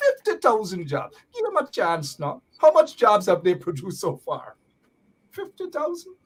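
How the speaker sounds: sarcastic mock praise. Mockingly defending the installed regime's job claims: sarcastic mock praise. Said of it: "Detect the sarcasm there".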